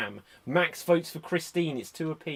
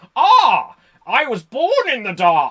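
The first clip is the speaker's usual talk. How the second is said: booming, swooping, absurdly posh villain voice; 7 semitones higher, 10 dB louder than usual. Describing Tom Hardy's take on the villain, quoting him in a ridiculously posh Bane voice. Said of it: "did this ridiculously posh voice for Bane".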